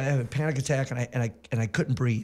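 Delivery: plain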